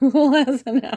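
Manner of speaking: talking through laughter. Reading viewers' comments aloud, laughing while talking. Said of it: "I'm laughing at your comments again".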